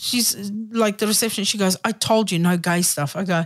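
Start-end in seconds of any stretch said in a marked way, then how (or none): 1.8-3.1 put-on furious female voice, lower. Retelling what the woman at reception said after the stage set: imitating a furious woman. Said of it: "she's furious".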